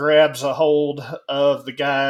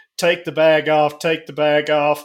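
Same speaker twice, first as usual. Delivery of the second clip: ordinary delivery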